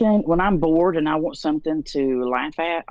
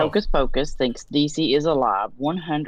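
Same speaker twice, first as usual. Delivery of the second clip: ordinary delivery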